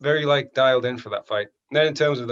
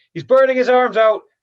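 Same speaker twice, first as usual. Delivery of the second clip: put-on high, raised, called-out Irish accent; 11 semitones higher, 8 dB louder than usual. Recalling holding a guillotine, the speaker quotes Kavanagh calling out, in Kavanagh's Irish accent. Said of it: "that was a good uh, Irish uh, accent there".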